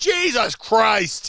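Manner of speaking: boisterous, very loud, very high, shrill outburst. Retelling a grandfather's reaction to a winning lottery number: imitating grandfather's loud outburst. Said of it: "he's very boisterous, very loud".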